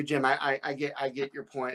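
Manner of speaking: ordinary talk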